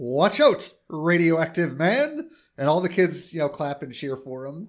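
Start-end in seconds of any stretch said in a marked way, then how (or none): 0.0-2.3 slow, loud yelling. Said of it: "he yells".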